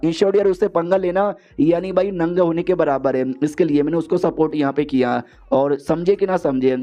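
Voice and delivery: ordinary talk, nothing marked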